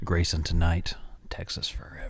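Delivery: sultry, low, quiet tone. Showing a co-host how the tagline should be said; sultry. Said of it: "you got to say it like all sultry".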